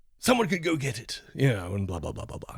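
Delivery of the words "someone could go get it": bad put-on old villain voice, higher. Pitching a plot idea about a dying villain: terrible Mr. Burns impersonation. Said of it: "terrible Burns impersonation".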